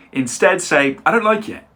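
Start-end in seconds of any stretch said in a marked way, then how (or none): 1.0-1.5 relaxed, smooth, natural conversational tone, lifted pitch. Showing learners the natural way to say the line: natural, smooth delivery. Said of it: "sounds way more natural".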